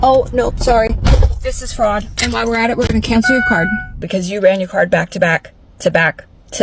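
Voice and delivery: ordinary talk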